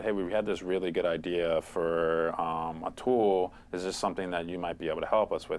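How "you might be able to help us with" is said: ordinary talk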